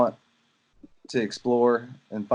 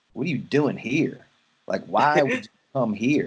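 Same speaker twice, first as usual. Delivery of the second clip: ordinary delivery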